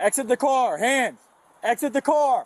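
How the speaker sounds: loud shouting. An officer orders a driver out of a car, yelling commands. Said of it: "Who are you yelling at?".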